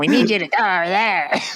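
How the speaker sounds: high, loud, croaking frog-in-throat voice. Recapping a cartoon episode, quoting what Morph says: Morph's weird frog-swallowed voice. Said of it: "It sounded like he swallowed a frog".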